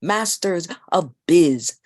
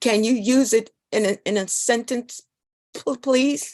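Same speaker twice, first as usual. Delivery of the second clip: high, halting, stammering, stuttering speech; 5 semitones higher than usual. A child, asked by the proctor to say a word loudly, answers stuttering. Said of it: "he stutters".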